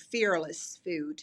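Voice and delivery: Australian voice shifting to low-pitched put-on American accent. Australian speaker saying her business's name again: american accent. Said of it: "let me say it in american".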